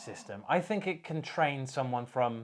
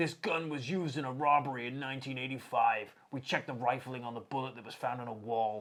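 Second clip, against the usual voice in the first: put-on American-accented voice. Retelling what a TV program said about tracing one gun: American accent. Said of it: "we don't have American accents".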